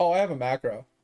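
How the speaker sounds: nonchalant offhand tone. Retelling another player's answer to a question: imitating a nonchalant reply. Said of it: "so nonchalant about it".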